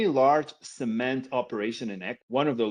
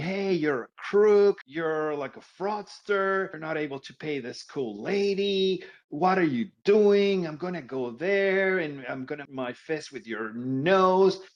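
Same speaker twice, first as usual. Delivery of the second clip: play-acted hostile, aggressive, accusing yelling; 4 semitones higher than usual. Retelling what a caller shouted on the phone: imitating someone yelling aggressively. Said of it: "start yelling at me".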